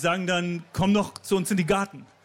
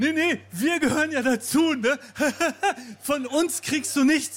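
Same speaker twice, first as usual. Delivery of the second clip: put-on cheerful tone, much higher pitch; 7 semitones higher than usual. Retelling how she and her supervisor addressed an older woman at the toilets, mock-cheerful. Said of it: "so fröhlich".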